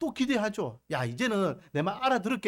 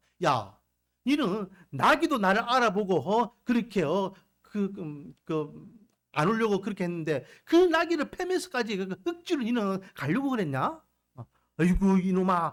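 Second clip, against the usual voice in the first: ordinary talk, nothing marked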